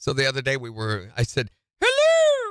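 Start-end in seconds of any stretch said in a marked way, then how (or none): 1.8-2.5 very high, loud character voice. Recalling saying hello the other day, in a Mrs. Doubtfire voice. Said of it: "like that. ... this Missus Doubtfire voice".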